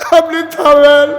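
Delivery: high, loud, desperate pleading outcry.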